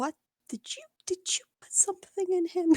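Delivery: high stage whisper. Voicing a character who asks the walking companion a question: whispering in character.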